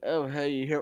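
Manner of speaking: emo-like, emo-style tone. A player's character greets a creature that landed in front of them: emo tone. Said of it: "kind of like that emo like tone".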